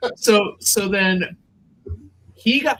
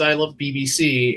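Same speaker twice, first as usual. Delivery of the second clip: usual speaking voice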